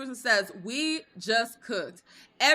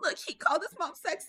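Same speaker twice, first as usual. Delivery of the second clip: whispered, breathy, jokey, dismissive tone; 7 semitones higher, 5 dB quieter than usual. Imitating people who treat the video as a joke: mock laughing it off. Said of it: "We wanna laugh it off like it's a joke".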